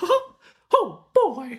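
very high-pitched, swooping squeak. Doing a requested impression for another speaker: Mickey Mouse voice. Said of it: "Do you want me to do the Mickey Mouse voice?".

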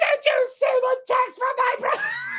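very high, loud, shouted calling voice.

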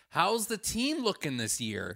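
condescending, talking-down voice. Retelling a stranger in the speaker's seat at a game, mock-condescending. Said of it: "condescendingly tells me".

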